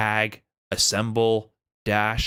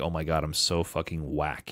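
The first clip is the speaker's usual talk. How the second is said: acted-out giggling, embarrassed, self-mocking laughter; 6 semitones lower, 6 dB quieter than usual. Retelling own reaction to a missed combo: retelling own laughing remark. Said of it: "I'm literally laughing like".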